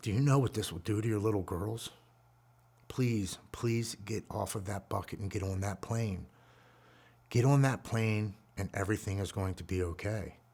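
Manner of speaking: mock soothing, gentle tone. Retelling how a woman talked them off a bucket, imitating a calm, loving voice. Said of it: "she says it really calming and".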